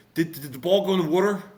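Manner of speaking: put-on South Jersey accent. Retelling a kid's question to his dad, in a south jersey accent. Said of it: "I'm going to do my South Jersey accent".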